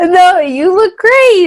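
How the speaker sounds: very high, very loud, very slow squeaky voice. Reassuring the other speaker that they look great: voice going up high. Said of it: "why did your voice go up so high".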